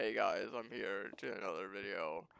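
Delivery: very quiet, low deadpan with no energy. Describing how own videos open, imitating own deadpan delivery. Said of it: "the most deadpan expression".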